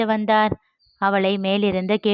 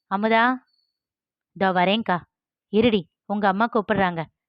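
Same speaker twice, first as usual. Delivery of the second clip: ordinary delivery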